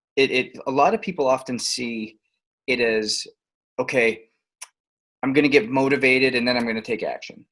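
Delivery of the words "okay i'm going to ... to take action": ordinary delivery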